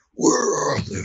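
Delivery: very high-pitched, gravelly superhero voice.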